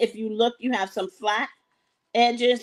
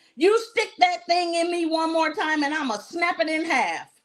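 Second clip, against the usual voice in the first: put-on high-pitched sudden shout at top voice; 6 semitones higher than usual. Telling a joke, the boy shouts at the friend who poked him, shouting. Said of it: "little Johnny shouted".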